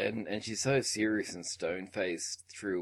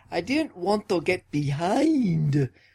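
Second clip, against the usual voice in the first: put-on, belted inflection, very high and very loud; 10 semitones higher, 8 dB louder than usual. Quoting Mary Reilly's reply to John Malkovich, with Mary Reilly's inflection. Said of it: "I'll try to get the inflection right here".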